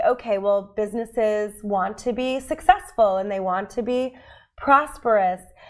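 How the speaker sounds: usual speaking voice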